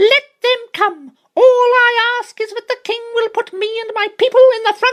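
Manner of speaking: very high, loud, shrill, small squeaky mouse voice. Reading a story, a voice pipes up from the doctor's feet; shrill small voice. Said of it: "said a very shrill and small voice".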